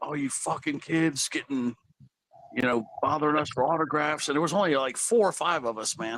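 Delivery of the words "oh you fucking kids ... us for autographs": mock, half-shouted, mild yelling rant. Retelling how a man yelled at kids wanting autographs, imitating a man yelling. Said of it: "started yelling like".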